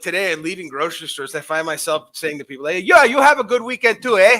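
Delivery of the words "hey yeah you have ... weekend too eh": put-on very loud, high, laid-on-thick Yooper accent. Describing what they find themselves saying to people leaving grocery stores, thick Yooper accent. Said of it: "that fucking real thick, thick, thin accent".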